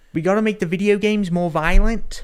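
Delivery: high, ridiculous crazy little guy way of talking. Trying to imitate how Taika Waititi talks in the film: Taika Waititi impression. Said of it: "I'm trying to do it".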